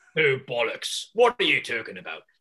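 loud, swooping, badly put-on British accent. Attempting a British accent after joking about Scottish, put-on British accent. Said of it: "I'll get the Great Britain down".

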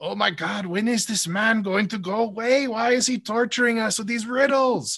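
put-on very high-pitched, thick German accent. Retelling a guy speaking through his doll to Conan, heavy German accent. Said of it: "he just uses this heavy German accent".

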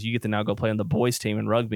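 plain

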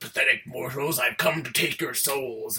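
hammy, grandiose, over-the-top evil emperor voice. Retelling a film ending where a shadowy figure appears: over-the-top Shao Kahn voice. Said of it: "in this really over-the-top way".

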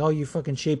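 ordinary talk, nothing marked

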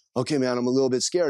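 ordinary delivery

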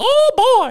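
very high-pitched cartoon mouse voice. Showing the voice they had in mind, in a Mickey Mouse voice. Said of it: "it's Mickey Mouse".

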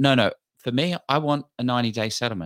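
ordinary delivery

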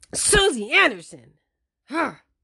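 loud, harsh, mad calling. Acting out saying your mom's name when you get mad: mock-angry harsh 'Susie Anderson'. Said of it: "saying your mom's name in a harsh way when you get mad".

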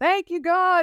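mock very high, overjoyed yelling. Recalling being told the news, the speaker retells a joyful yell. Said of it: "I'm yelling".

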